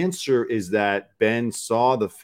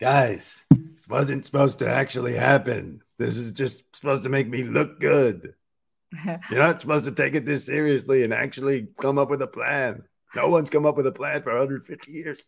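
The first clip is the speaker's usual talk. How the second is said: affected, higher put-on voice, hard to hold; 5 semitones higher than usual. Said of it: "it's hard to talk like that".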